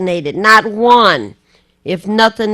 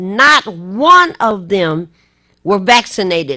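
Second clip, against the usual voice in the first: raised voice with swinging pitch. Reporting Michigan's COVID deaths, the speaker says this with a raised voice. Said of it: "I'm raising my voice".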